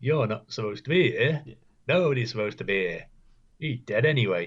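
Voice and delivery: loud, merry, chirpy, sing-song killer voice. Retelling a show scene where an assassin finds a woman at a bedside; mock-cheerful assassin voice. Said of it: "this most fucking cheerful assassin you'll ever meet".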